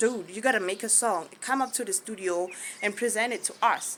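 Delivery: ordinary delivery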